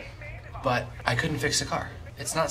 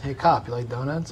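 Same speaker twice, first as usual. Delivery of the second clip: usual speaking voice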